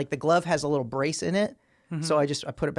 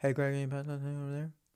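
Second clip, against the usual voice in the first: put-on mumbling, quieter; 7 dB quieter than usual. Retelling how coworkers ask for things: imitating a mumbling coworker. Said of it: "people that mumble all the time".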